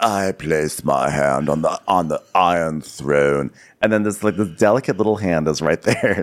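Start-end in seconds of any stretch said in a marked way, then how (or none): 0.0-3.5 mock very slow, heavy, brooding delivery. Mocking a line another speaker just said: imitating brooding speech. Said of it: "speaking so, so broodingly".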